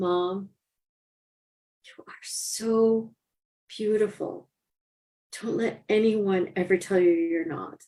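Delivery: mock, sweet as can be, sweetest voice imaginable. Mother retelling what her daughter said while lying there, imitating the sweetest voice. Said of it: "in the sweetest voice you could imagine".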